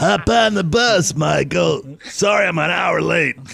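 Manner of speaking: high raspy character voice. Joking about a bad school bus driver: Otto voice.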